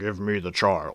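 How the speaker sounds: low, soft, filtered, distorted alien voice. Recommending something to watch, the speaker quotes a character in a distorted alien voice. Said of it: "he has an alien voice where they just put a voice filter over it".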